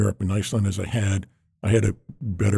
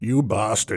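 put-on British English accent. Retelling a phone call from a British competitor: imitating a British accent. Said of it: "it was the British accent saying".

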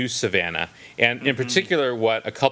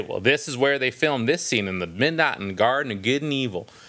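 put-on tour-guide Southern accent. Speaker imitates a Savannah tourist trip guide, in a Southern accent. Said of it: "That's my Southern accent".

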